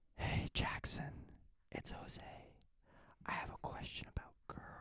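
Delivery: hushed, soft, breathy, barely voiced whisper. Asked to do a whisper, speaker reads a message aloud in a whisper. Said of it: "Do a whisper".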